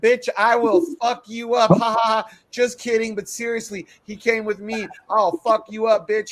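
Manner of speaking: loud, high voice, laughing, then turning serious. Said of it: "she starts laughing".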